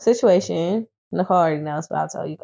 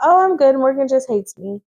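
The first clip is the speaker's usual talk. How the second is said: trying-to-be-funny delivery; 6 semitones higher than usual. Retelling what a woman told the bartender: imitating someone trying to be funny. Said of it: "trying to be funny".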